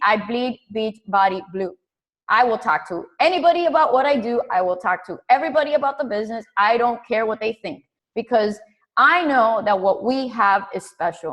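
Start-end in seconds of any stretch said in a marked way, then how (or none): none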